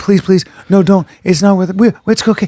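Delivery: play-acted soothing, calming pleading tone. Retelling how friends begged a furious man to stop: imitating soothing a growling dog. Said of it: "the way you would do to a dog".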